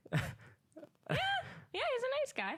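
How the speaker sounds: squeaky, very high, very slow, swooping sing-song. Replying in conversation about a man, pitch jumps up high. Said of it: "Your your pitch went up like three octaves there".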